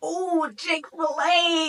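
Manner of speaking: excited, high-pitched voice. Retelling the moment she suggested Chick-fil-A, with reenacted excitement. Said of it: "So I'm getting super excited".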